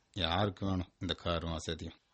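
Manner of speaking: low, slow, soft mumble. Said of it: "என்ன முணங்குற?".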